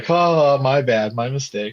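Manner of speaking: slow, drawn-out, making-light, laugh-it-off tone. Retelling what a woman said to cover herself, imitating laughing it off. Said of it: "she's trying to laugh it off like".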